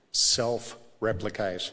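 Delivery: said again slowly, self-replicate drawn out very slowly.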